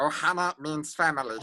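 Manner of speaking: small, animated cartoon alien creature voice. Demonstrating a series of cartoon character voices: Stitch voice. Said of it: "That's Stitch".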